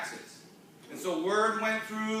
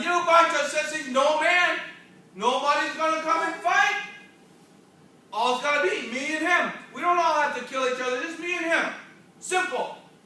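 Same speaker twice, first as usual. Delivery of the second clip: mock giant's loud, high-pitched jeering yell; 6 semitones higher, 5 dB louder than usual. Retelling a Bible story to a child, imitating a giant yelling. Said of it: "And he's yelling".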